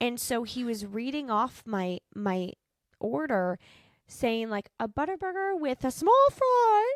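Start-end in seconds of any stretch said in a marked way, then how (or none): 4.8-6.9 very high, raised, squeaky voice. Retelling how he read off your order, voice jumping way up high. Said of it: "his voice went up like three octaves. ... that's exactly how it sounded".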